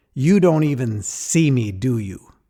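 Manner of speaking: mock angry outburst. Retelling what his sister said when she confronted him: imitating her angry words. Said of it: "she is livid".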